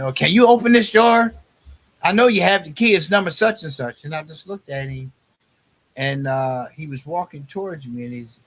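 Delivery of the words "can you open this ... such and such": loud, pushy, insistent delivery throughout. Retelling how an inmate demanded a door be opened: imitating a loud demand. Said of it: "He's being all loud".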